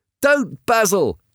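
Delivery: shouted, pitched very high. Dorian runs to basil, takes his knife, and shouts at him. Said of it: "he shouted".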